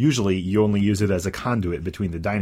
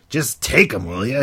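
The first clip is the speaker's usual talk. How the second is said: rough, gruff growl, irritated; 4 semitones higher, 4 dB louder than usual. Narrator voices a cook shoving cards into the listener's hands, growling. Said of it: "He growls".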